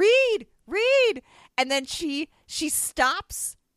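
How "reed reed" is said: mock yelling, much higher, louder. Retelling a woman in the getaway car calling out, retelling a yell. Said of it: "she's yelling".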